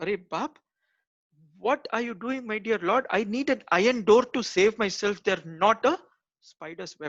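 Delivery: stunned disbelief. Telling a story, the speaker voices a soldier seeing spiders at a cave: retelling a stunned soldier. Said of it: "This soldier is like fully stunned".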